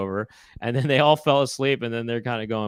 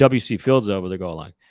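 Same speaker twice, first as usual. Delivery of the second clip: ordinary delivery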